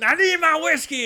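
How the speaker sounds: put-on acted old man's loud, abrupt, sudden shout. Telling a story about an old man carried in with a broken leg, retelling his shout. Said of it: "Just starts shouting".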